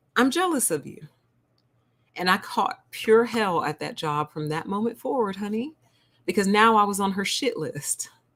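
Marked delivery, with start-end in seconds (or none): 0.1-1.0 dry, unjoking, matter-of-fact, slightly high tone. Retelling a coworker's remark over Zoom: imitating a matter-of-fact tone. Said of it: "She just took in the whole picture and goes".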